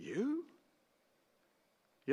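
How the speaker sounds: heavy stress on you, questioning tune. Quoting the governor questioning a bound prisoner: stress on YOU. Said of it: "the emphasis falls on you".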